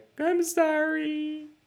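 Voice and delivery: high, slow, drawn-out mock apologetic voice, sorry stretched. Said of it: "We're not gonna be like".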